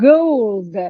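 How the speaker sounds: emphatic stress on gold. Demonstrating an example sentence for listeners, stress on gold. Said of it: "emphasis is put on the word gold".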